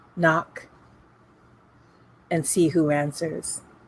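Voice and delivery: quiet half-whispered voice. Narrator voicing a raven watching the four of you, half-whispering raven. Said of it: "the raven whispers".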